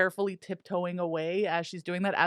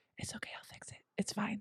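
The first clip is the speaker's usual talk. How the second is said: gentle, soft, reassuring whisper; 3 semitones higher, 11 dB quieter than usual. Player voicing Meep comforting a defeated Vel, Meep whispering reassurance. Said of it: "she just kind of like whispers like".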